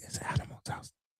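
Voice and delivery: very quiet, hushed, confiding whisper, barely voiced. Retelling what the other speaker whispered to them: imitating a whisper. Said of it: "then you whisper to me and say".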